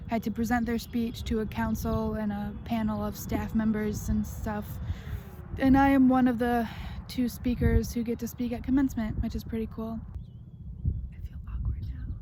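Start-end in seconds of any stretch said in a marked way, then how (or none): 11.1-12.1 hushed whisper, faster. A student filming a senior vlog, awkward about being heard, whispering.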